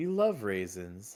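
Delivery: very low, airheaded woman's put-on voice. Comparing a film's mom to another movie mom, airheaded Better Off Dead mom. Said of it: "She was kind of like airheaded".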